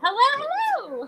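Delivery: very high put-on voice. Explaining what happens as soon as the camera goes on: high-pitched on-camera greeting. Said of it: "it's a higher version of what I'm doing".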